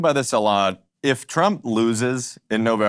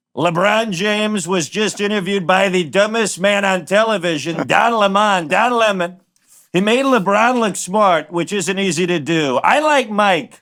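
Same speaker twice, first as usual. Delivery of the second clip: very high-pitched voice; 9 semitones higher, 4 dB louder than usual. Reading a president's tweet aloud to the guest: Donald Trump voice. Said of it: "read Trump's tweet to you in his voice".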